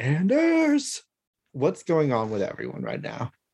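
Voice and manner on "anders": shrill, very high, calling-out holler. Retelling what a character yelled: imitating a yell. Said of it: "He just yelled".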